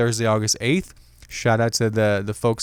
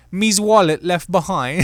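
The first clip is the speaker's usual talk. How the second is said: silly, high-pitched put-on British accent; 7 semitones higher than usual. Reading out a lost-item notification, in a dumb British accent. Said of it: "I sound like a dumb British person reading this".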